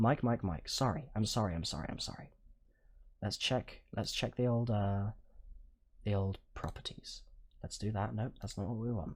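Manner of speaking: speaking softly. Checking a faulty microphone's settings while live, talking quietly. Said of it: "I'm talking nice and quiet so the mic hopefully gets fixed".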